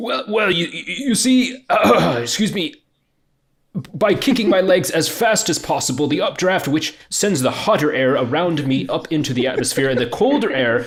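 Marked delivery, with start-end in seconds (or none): 0.0-6.1 strangled, choked-up voice, pitched up. Showing the delivery he really wants, line in a choked-up voice. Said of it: "so it's like very choked up".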